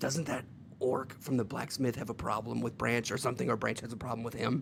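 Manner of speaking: extremely quiet, barely audible whisper. Asking the others a question about an orc, speak in a very quiet whisper. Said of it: "I'm gonna whisper in as quiet as possible".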